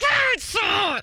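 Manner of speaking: mock-angry through gritted teeth. Retelling a child who wants to play outside, mock-angry, through gritted teeth. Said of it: "Like talking through my teeth".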